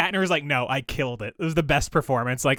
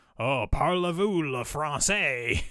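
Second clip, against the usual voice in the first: bad, terrible fake French accent. Imitating people at a restaurant, in a terrible fake French accent. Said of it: "in a terrible fake French accent".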